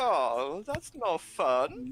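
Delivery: high, swooping, very slow, drawn-out sing-song. Voicing a character who misses out on a hug: Gunther character voice. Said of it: "You hear a voice go".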